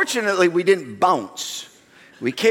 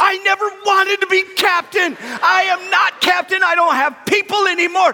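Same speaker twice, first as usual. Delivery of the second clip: mock very high, loud shouted yell; 5 dB louder than usual. The speaker retells yelling back at someone in the water, retelling their own yell. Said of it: "And I yelled back".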